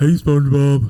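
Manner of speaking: loud, called-out cartoon character voice. Doing an impression after being asked: Patrick Star voice. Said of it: "Do your Patrick Star impression".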